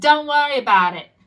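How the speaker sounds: loud, put-on New York accent. Speaker quotes what Spirit tells them: New York accent. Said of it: "It's like in a New York accent".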